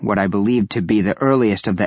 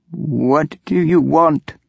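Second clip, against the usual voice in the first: trembling, unsteady, shaky high-pitched voice; 7 semitones higher than usual. Reading a story aloud, voicing a character's question in a shaky voice. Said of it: "in a shaky voice".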